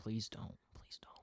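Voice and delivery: whispered, breathy, begging tone. Retelling begging a friend not to speak to a waitress: retelling own pleading. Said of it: "He's pleading".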